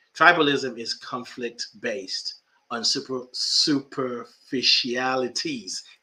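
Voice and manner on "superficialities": slow, drawn-out delivery. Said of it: "I just say that slowly".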